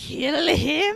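shrill, screeching voice. Retelling a movie scene, Voldemort orders Quirrell: Voldemort screeching. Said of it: "Voldemort screeches at Quirrell".

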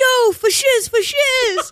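very high, very slow, shrill, drawn-out yell. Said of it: "was yelling".

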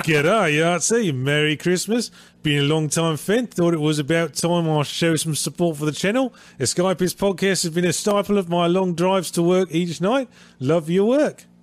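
inconsistent fake Australian accent. Speaker reads a supporter's message to the channel aloud, put-on Australian accent. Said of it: "I guess I'm doing the accent".

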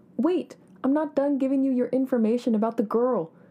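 loud, high-pitched calling out. A man calls after the narrator, who has turned to walk away, yelled. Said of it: "he yelled after me".

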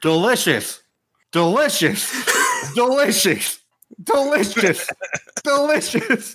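put-on top-of-the-lungs yell, very high, drawn-out, rising. Describing what passengers kept hearing in a train car: retelling a yell at full lungs. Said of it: "They yelled it out at the top of their lungs".

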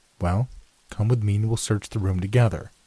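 ordinary delivery, nothing marked

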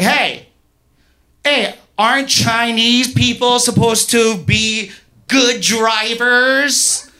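high, mocking sarcastic taunt, tossed off. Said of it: "in a, like, sarcastic way".

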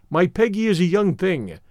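ordinary delivery

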